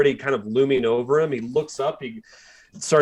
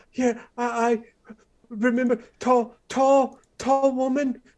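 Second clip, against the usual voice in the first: put-on very high, terrified boy's voice, stammering; 10 semitones higher than usual. Game master voicing a terrified boy questioned about Desiderata, frightened stammering boy. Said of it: "he goes".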